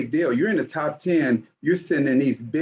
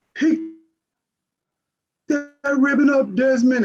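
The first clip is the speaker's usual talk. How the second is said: put-on loud, booming, high-pitched bark; 10 semitones higher, 4 dB louder than usual. Retelling how the coach told him off: imitating a loud booming voice. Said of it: "he loud booming voice".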